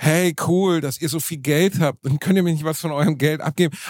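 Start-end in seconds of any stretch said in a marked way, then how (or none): none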